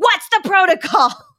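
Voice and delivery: high-pitched, loud, mocking tone.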